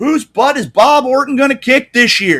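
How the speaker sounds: booming shout, very loud and very high. Retelling a man calling out from the back of the room: big booming voice. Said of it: "big booming voice from the back of the room".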